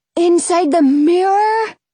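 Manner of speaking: high, disbelieving, incredulous rising tone. A boy responding to the narrator's plan, incredulous. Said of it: "He asks incredulously".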